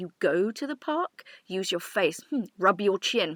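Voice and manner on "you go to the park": heavy emphasis on the word "go". Showing how to echo a student's mistake back: stress on go. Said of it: "And stress that wrong word".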